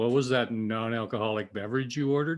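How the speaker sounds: ordinary talk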